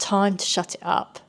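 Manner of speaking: ordinary talk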